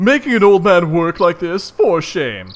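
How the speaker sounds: put-on belted, shrill, high, very loud old-man voice. Trying to recall the voice for the character Kamendul: Kamendul voice. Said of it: "what voice I was doing for Kamendul".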